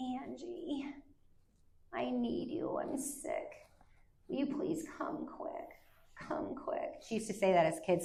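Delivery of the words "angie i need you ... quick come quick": put-on breathy, whispered, manipulative baby talk. Imitating how she calls in a manipulative way: childlike baby voice. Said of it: "she'll use this baby voice".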